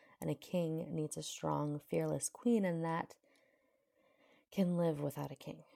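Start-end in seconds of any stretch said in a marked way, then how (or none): none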